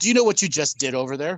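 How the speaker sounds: hard, accusing, stern cop-style interrogating tone. Playing a cop who comes up to a driver's window: playing the bad cop. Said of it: "bad cop".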